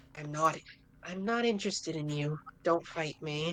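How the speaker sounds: surprisingly soft-spoken, low-pitched voice. Game master voicing a short figure speaking to the player, surprisingly soft voice. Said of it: "they say in a surprisingly soft voice".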